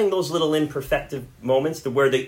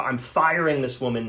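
plain

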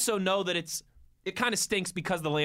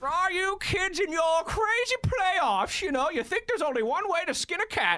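very high-pitched put-on voice; 13 semitones higher than usual. Imagining being an old guy on the porch talking to kids, sounding like Bane. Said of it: "Why you sound like Bane?".

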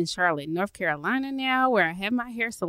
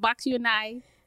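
put-on Charleston accent; 2 semitones higher than usual. Introducing yourself as from Charleston on your first podcast episode, demonstrate by imitating a Charleston accent. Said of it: "That's my Charleston imitation".

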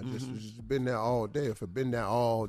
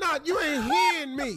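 raised, argumentative voice, speaking up; 5 dB louder than usual. In an acted argument, telling the other they aren't being heard: raised voice. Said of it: "My voice raising because you're not listening".

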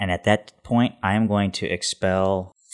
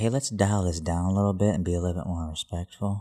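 hushed, quieter whisper; 6 dB quieter than usual. Speaking in character to the others in a role-play scene, whispering. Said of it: "I'm going to whisper and say".

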